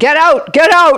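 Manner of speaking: very loud, high-pitched, booming shouted outburst. Retell how he spoke out loud to the virus before it ran away, imitating a very loud voice. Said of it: "in a very loud voice".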